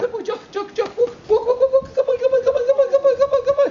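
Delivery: quick high-pitched repetition. Encouraging a puppy to keep walking: high-pitched, fast, repetitive voice. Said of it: "that high-pitched voice, fast, repetitious".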